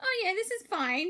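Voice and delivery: high, breezy, oblivious, carefree voice.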